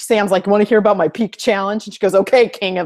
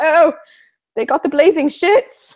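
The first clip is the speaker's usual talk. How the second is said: put-on British accent, pitched up; 8 semitones higher than usual. Quoting a boy who spoke with a british accent: put-on british accent. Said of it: "that's actually just my British voice".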